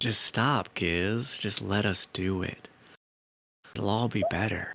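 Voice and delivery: unsettling royal-sounding voice. Narrating a swarm whose scuttling turns into a voice speaking to Giz, in Queen Blizzard's voice. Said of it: "It is Queen Blizzard's voice".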